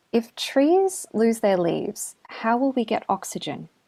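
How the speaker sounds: worried, earnest, rather concerned tone. Retelling what a son asked while out exploring: imitating a rather concerned voice. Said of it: "in a rather concerned voice".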